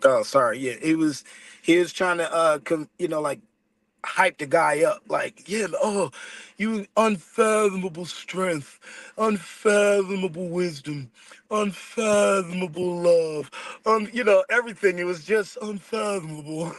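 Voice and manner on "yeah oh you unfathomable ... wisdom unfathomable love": slow, grand, slightly British put-on accent. Retelling how a movie character hyped another up: imitating a British accent. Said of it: "he was doing it in an accent".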